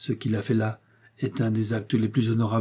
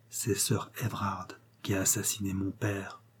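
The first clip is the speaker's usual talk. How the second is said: sinister near-whisper, every word clearly articulated; 2 semitones lower, 9 dB quieter than usual. Morton draws close to his aunt and speaks in a sinister near-whisper. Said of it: "presque tout bas, en articulant chaque mot d'un ton sinistre".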